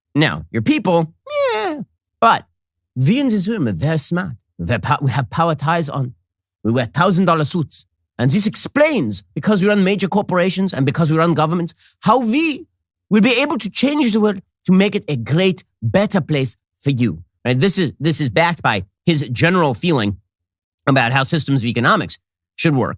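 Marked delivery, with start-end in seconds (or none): 0.2-17.3 higher, mock thick Germanic accent. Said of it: "He also said this with a very thick Germanic accent".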